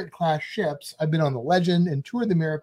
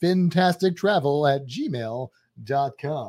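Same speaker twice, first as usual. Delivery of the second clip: lower-pitched radio-announcer voice; 2 semitones lower than usual. Podcast host repeating the show's email address, in an announcer voice. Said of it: "That's my announcer voice there".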